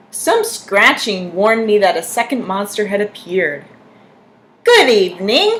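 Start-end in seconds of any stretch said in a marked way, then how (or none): 4.6-5.6 high, silky, raised voice. A second monster arrives and greets the narrator, in a high, silky voice. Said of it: "he said in a high, silky voice".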